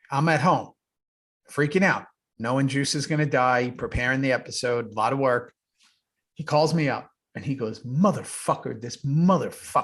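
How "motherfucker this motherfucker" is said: foul-mouthed swearing, cursing delivery. Retelling how Dayton called him up, imitating Dayton's cursing. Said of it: "You know the way he talks".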